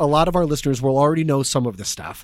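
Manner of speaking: ordinary talk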